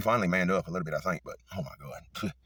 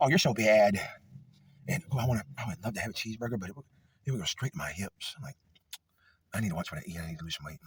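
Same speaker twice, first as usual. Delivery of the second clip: super feminine put-on male voice; 2 semitones higher than usual. Speaker describing a stereotype of a very feminine guy, imitating an effeminate man. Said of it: "he probably talks like this".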